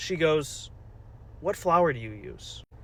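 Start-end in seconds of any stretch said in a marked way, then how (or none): 1.4-2.6 quiet muttering under the breath. Retelling a diner speaking to the manager, muttered under her breath. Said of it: "Under her breath".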